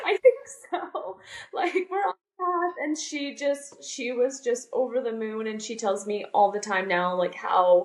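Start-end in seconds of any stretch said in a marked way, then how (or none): 0.0-2.7 put-on teary, tearful voice, higher. Retelling own answer to an aunt after bursting into tears: imitating own tearful reply. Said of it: "I just burst into tears and I was like".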